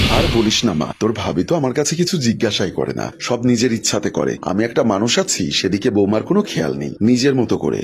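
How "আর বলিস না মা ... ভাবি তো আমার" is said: usual speaking voice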